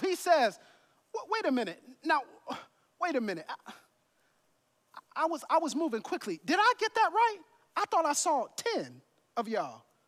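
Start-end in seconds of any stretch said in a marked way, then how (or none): 1.1-9.8 acted-out dripping sarcasm on every word, sing-song swoops. Acting out Jesus questioning the healed man: sarcastic petty Jesus voice. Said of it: "I can see the sarcasm dripping".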